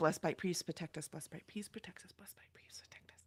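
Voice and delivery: whispering under breath. Staying as close to Zepho as he can, whispering to himself. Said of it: "I'm whispering to myself".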